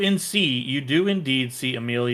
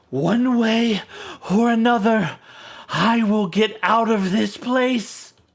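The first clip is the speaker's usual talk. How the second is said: high-pitched scream; 9 semitones higher, 4 dB louder than usual. Voicing a possessing spirit being forced out of a body: screaming spirit. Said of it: "she screams".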